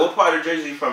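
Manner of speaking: ordinary delivery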